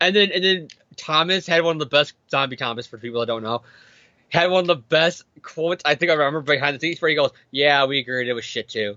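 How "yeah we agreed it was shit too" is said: put-on miserable, hating-life tone, pitched lower. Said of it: "the tone of voice he said it was so much like he hated his life".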